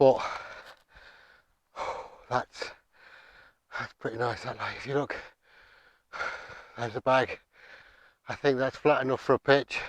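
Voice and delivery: out of breath, huffing and puffing, panting. Just scrambled up a mountainside with a heavy pack: out of breath, huffing. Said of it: "I'm sorry about the huffing and puffing".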